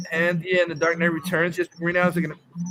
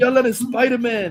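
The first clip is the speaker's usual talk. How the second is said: put-on upset ranting voice, pitched higher; 5 semitones higher, 3 dB louder than usual. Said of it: "he's getting upset".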